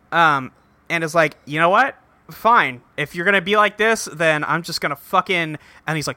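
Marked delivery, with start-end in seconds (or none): none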